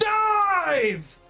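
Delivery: very high screamed, "dive" stretched out. Narrating an interactive story, voicing the father as he screams. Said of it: "quickly grabs at you and screams".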